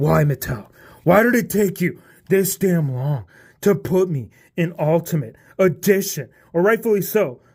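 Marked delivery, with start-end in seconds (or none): 0.0-6.3 somewhat upset, hurt, aggrieved complaining tone. Voicing a figure's complaint to the toy maker: pretend upset Drew McIntyre voice. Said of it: "he's just kind of upset".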